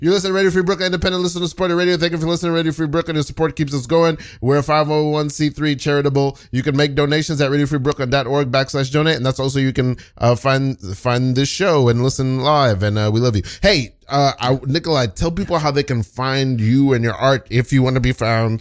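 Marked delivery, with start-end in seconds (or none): 0.0-9.2 rushed, rattled-off radio announcer read, pitched up. Radio host reads the station announcement, trying to do a very fast read. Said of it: "I'm gonna try to do this read real fast".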